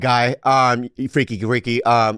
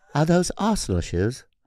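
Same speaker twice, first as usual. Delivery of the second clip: put-on Greek accent; 3 semitones higher, 5 dB quieter than usual. Retrying the imagined passerby's line in a put-on accent heard as Greek. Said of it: "That's good".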